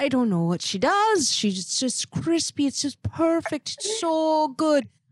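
put-on Irish-accented delivery. Telling the cook how a woman raves about her jerk chicken, quoting her irish accent. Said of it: "In an Irish accent".

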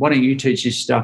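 ordinary talk, nothing marked

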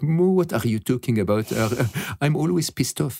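put-on laughing, French-accented delivery. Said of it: "he laughs in his very, very French accent".

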